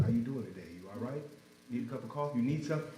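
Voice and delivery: gentle, calm, soothing, very quiet voice. Showing how simply talking to someone struggling can help: calm, soothing voice. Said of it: "a calm, soothing voice".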